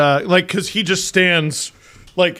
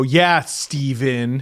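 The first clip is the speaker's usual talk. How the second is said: put-on sassy, needling, cheeky teasing tone; 4 semitones lower than usual. Retelling how the child joins in mocking him. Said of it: "then Leo will go".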